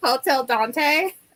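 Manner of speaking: put-on California accent. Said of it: "In a real Californian accent".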